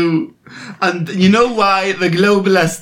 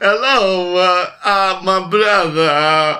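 stretched-out poor Italian accent. Doing a made-up brother of a celebrity: Neil Walken voice. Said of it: "Christopher Walken's brother, Neil Walken".

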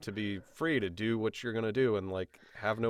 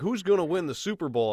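pitched-up, laid-on-thick, put-on Southern accent; 7 semitones higher, 5 dB louder than usual. Retelling what an old attendant said to the speaker, imitating thick southern accent. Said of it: "thick Southern accent".

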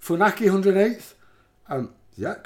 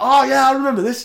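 high-pitched, loud, thrilled and delighted outburst. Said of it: "I was like".

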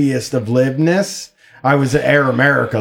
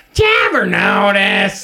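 high-pitched, swinging cartoon voice; 6 semitones higher than usual. Doing a bit on the show: Beavis voice. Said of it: "I'm doing a Beavis voice here".

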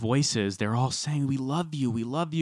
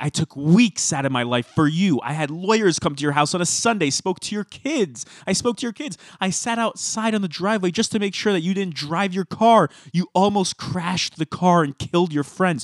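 mock exasperated, loud, high ranting scream; 6 semitones higher, 5 dB louder than usual. Retelling a reality-show fight where Bethany starts screaming: imitating someone screaming exasperated. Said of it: "she starts screaming".

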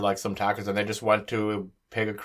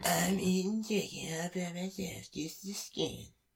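put-on cartoon boy voice, higher and quieter; 9 semitones higher, 10 dB quieter than usual. Acting out a customer returning chicken: Eric Cartman impression. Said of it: "do your best little Eric Cartman impression".

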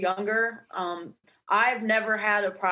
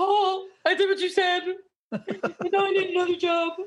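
acted-out very high, tearful sobbing voice; 9 semitones higher than usual. Imagining coming back after being fired and pleading for another job: imitating crying. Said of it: "I come on and I'm crying and I'm like".

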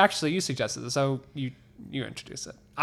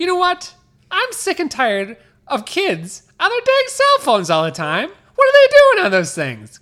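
really high, very loud comic voice; 14 semitones higher, 9 dB louder than usual. Doing a comedy bit for the other speaker, ranting in a really high voice. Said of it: "This is a bit I'm doing called really high voice comic".

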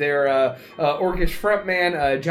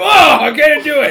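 put-on heavy-lifting strain, very high and loud; 10 semitones higher, 8 dB louder than usual. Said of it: "he pretends to try to pick you up".

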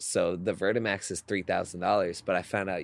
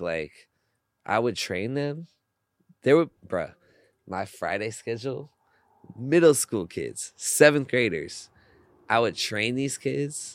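tearful, raised voice, tearing up; 4 semitones higher, 5 dB louder than usual. Speaker recalls training middle school kids on Fridays, tearing up. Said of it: "that's why I'm tearing up right now".

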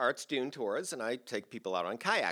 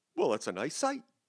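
put-on speaking with a German accent; 3 semitones higher than usual. Retelling what a man parked next to them said, in a German accent. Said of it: "in this German accent and says".

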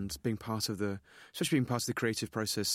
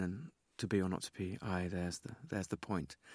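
mock-serious grave tone, lower and quieter; 3 semitones lower, 6 dB quieter than usual. Explaining the Hamlet players' scene, act out the first player in a very serious tone. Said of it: "take on a very serious tone".

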